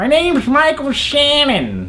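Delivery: slow, dragged, very high-pitched put-on voice. Debating who would win a fight, the speaker does a Michael Shannon impression. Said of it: "That's my impression of Michael Shannon".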